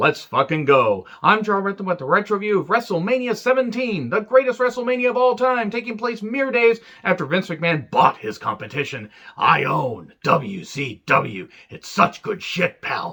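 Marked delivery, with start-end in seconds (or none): 9.4-13.1 terrible, very slow, drawn-out strained voice. Opening a wrestling review with a Vince McMahon impression. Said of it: "that Vince impression".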